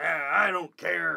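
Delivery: hard-sounding, tough voice. Playing a fictional character in a scene, in a hard voice. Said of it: "and a hard voice, too".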